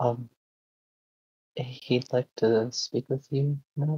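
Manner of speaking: very quiet, soft-spoken, hushed voice. Voicing a character telling someone he'd like to speak now: very quiet voice. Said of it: "then very quietly".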